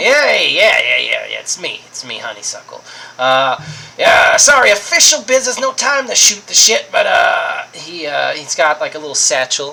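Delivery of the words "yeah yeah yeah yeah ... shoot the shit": improvised raccoon character voice. Voicing a raccoon greeting the player on official business: Honeysuckle the raccoon voice. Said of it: "I can't remember his voice".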